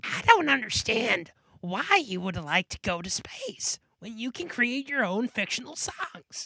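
put-on cartoon child character voice. Picturing the cartoon character in someone's class, doing a Bobby Hill impression. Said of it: "if Bobby Hill was in Punky's class, he'd be like".

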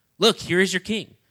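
put-on sarcastic tone. Acting out a quoted line: imitating a sarcastic tone. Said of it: "Saying it in a sarcastic way".

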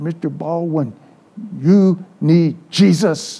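slow, simple broken-English phrasing. Retelling what a maid said after being screamed at: imitating broken english. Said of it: "in her broken English".

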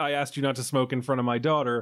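ordinary delivery

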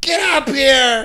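mock, very high, screaming grandma voice. Retelling how grandma called down to the basement: imitating grandma screaming. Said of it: "She'd be fucking screaming down to you".

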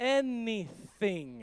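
very slow, drawn-out, slow-motion delivery.

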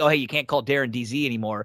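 usual speaking voice

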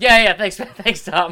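flustered, awkward, blurted out high and loud.

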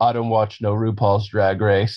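put-on macho voice. Retelling his reply on his first visit to someone's house, in an intentionally lowered voice. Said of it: "Intentionally lowered my voice".

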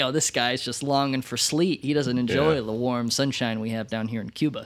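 ordinary talk

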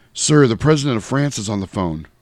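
normal talking voice

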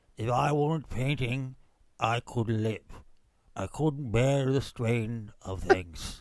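put-on low, slow, droopy drawl. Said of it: "You sounded like Droopy Dog doing an impression of Churchill".

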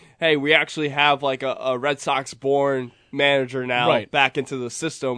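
plain

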